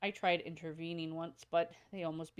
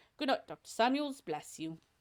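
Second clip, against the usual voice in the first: horrible put-on Cockney accent, pitched up; 6 semitones higher, 4 dB louder than usual. Voicing a character who bids the doctor good night, in a horrible Cockney accent. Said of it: "My horrible Cockney accent".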